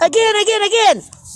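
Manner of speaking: put-on very high, loud, excited childlike squeal like giddy kid.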